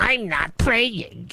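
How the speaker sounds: put-on high, whiny, sulky baby voice. Quoting Chewy's reaction, mocking Chewy in a baby voice. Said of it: "in talking in a baby voice".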